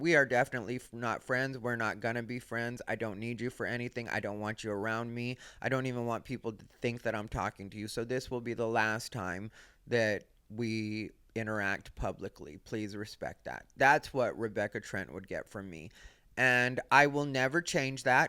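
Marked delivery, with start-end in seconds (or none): 0.0-13.6 hushed, quiet, confidential private tone. Acting out what would be said to a disliked person: put-on hushed tone. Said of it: "tell her in a hushed tone".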